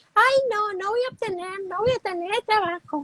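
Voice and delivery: ridiculing, goofy, high cartoon-character voice. Demonstrating how to ridicule a negative thought, in a ridiculing put-on voice. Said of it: "Con esa voz".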